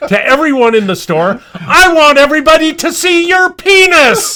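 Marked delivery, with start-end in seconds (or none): 1.5-4.4 high, loud yell at the top of the lungs. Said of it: "yells out at the top of his lungs".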